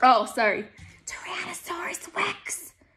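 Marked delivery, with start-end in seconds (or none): 1.1-2.7 hushed, high-pitched whisper under the breath. Narrator reading Jack's line in a story, whispered. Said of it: "Whispered Jack".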